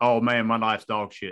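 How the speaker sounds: put-on Texas accent on every word. Voicing what the person being texted would never say, in a Texas accent. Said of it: "in that Texas accent".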